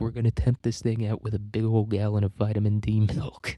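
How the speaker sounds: plain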